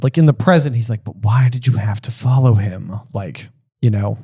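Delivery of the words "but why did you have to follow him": exasperated, spoken low. Acting out how a line in the book sounds: exasperated Dumbledore. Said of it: "he's exasperated".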